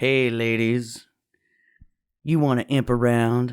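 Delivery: low, sultry, seductive come-on voice. Describing an imp character who starts talking, imitating the imp's sexy voice. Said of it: "Because he's got the voice".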